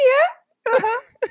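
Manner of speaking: mock dismissive, very high squeak, bored.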